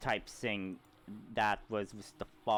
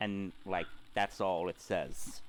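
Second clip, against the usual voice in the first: ordinary talk, nothing marked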